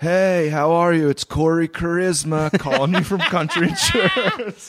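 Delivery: put-on laid-back stoner voice. Retelling how a stoner telemarketer opened his calls, imitating Corey Charisma. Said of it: "he was like kind of a shaggy stoner type".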